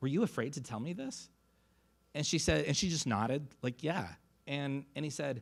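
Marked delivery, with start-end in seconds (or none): 0.0-1.3 quavering, unsteady, trembling voice. Retelling a man leaning close to her to ask, imitating his shaky voice. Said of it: "his voice gets shaky".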